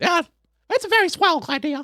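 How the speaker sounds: very high little cartoon mouse voice. Telling a listener about voice acting gigs, demonstrating a Mickey Mouse voice. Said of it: "I do like Mickey Mouse".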